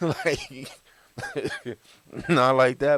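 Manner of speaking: laughing and coughing through the words. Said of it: "but I'm laughing".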